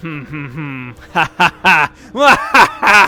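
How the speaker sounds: crazy cackling laugh. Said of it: "You sound like a crazy person".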